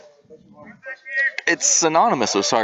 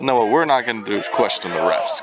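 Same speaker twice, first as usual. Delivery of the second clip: ordinary talk, nothing marked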